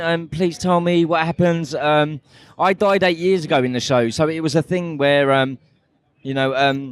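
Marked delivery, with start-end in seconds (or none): 0.3-1.7 mock begging, pleading tone. Retelling what fans say to get spoilers: imitating pleading fans. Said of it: "It's just pleading".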